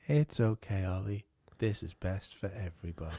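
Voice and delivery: low, machine-like robot voice. Imagining a robot speaking to ollie as he wakes, in a robot voice. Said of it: "you just hear the robot's voice going".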